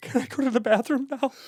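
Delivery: very high, squeaky, pleading voice. Doing a Jared Kushner impression for the other speaker. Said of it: "I can do Jared Kushner".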